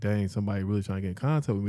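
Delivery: plain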